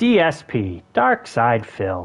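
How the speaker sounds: TV commercial announcer voice. Saying a name aloud, Medicare commercial voice. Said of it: "I like doing my Medicare voice".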